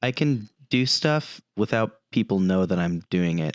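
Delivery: quiet under-breath murmur, half to oneself. Retelling what she said while the others goofed around, imitating quiet under-breath muttering. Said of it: "says quietly under her breath".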